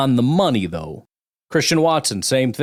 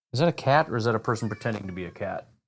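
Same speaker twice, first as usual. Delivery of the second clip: ordinary talk, nothing marked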